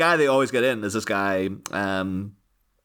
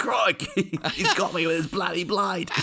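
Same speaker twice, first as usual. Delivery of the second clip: very high, slow, over-the-top Australian accent; 9 semitones higher than usual. Giving a quick demo after a knife-crime remark, in an ultra Australian accent. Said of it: "go ultra Australian with a demo".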